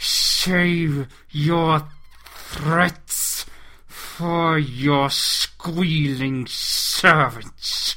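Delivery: drawn-out hissing words. Narrator reads a character answering another's threats, hissed. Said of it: "he hissed".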